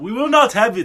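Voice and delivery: put-on high Nigerian accent. Discussing the accents in a show, speaker quotes one character's line in a Nigerian accent. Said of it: "like the West African, like Nigerian accent".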